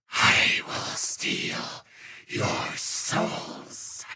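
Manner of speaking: evil, demon-like voice. Showing the voice someone thought sounded demonic, demonic voice. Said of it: "he thought he sounded demonic".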